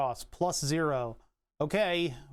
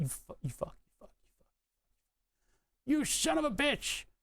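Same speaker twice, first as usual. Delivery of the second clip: furious swearing, pitched very high; 11 semitones higher than usual. Struggling to solder a wire that won't cooperate: angry cursing. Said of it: "I'm so mad right now".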